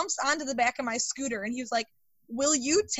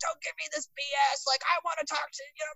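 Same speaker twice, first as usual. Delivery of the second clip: put-on grumpy, cranky voice; 3 semitones higher than usual. Recalling answering work calls from upset people, mimicking an ornery caller. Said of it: "we would get people who were so ornery".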